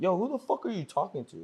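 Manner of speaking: in-your-face tough talk. Retelling a confrontation with a man who insulted him: retelling own tough challenge. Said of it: "flexing on him".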